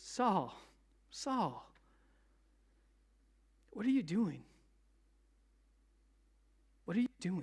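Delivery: soft, tender, loving, gentle calling voice. Speaker acts out God calling to Saul, retelling God's gentle voice. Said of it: "it's that gentle voice".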